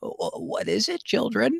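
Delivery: put-on very high, crackly, creaky elderly woman voice. Telling a story about the school lunch lady, put-on old lady voice. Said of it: "I'll try to do an old lady voice".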